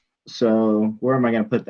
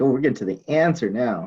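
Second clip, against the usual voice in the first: usual speaking voice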